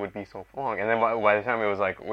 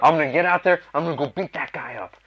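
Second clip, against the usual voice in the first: worked-up, angry bluster, pitched up; 6 semitones higher than usual. Retelling being stuck in traffic: imitating own angry self. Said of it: "getting angry".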